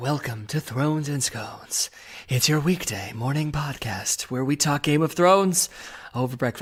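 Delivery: whispery, breathy radio announcer voice. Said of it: "almost like an N P R kinda whispery".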